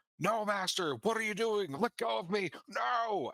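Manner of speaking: desperate, very high shriek in skeleton voice. Narrating a game scene to the players, voicing a skeleton that screams. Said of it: "it opens its jaw and just screams".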